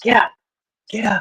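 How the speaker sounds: hushed, pressing, urgent half-whisper. Retelling how her mom woke her in the night, imitating her half-whispering. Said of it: "she's whispering".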